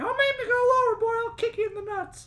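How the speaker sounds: very high, loud, pushed cartoonish voice. Playing the seamstress haggling over a price with a customer, Mickey Mouse voice. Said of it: "[name] has a small crush on you. / [name] is just putting away some stuff. / [name]'s seamstress. / Just talk like Mickey Mouse".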